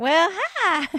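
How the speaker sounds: genteel, high-pitched southern gentleman drawl. Voicing the little cat by the refrigerator, southern gentleman accent. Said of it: "the little cat who sounds like a southern gentleman".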